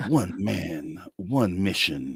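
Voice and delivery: epic, deep, slow movie-trailer narrator delivery. Recalling childhood attempts at it, doing that movie voice. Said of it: "I used to try to talk in that movie voice".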